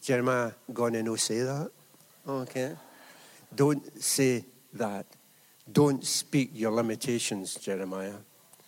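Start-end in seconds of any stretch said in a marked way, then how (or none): 0.0-1.7 put-on Glaswegian Scottish accent, admonishing tone. Quoting someone telling Jeremiah not to say that, in a Glasgow accent. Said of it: "use a Glasgow accent".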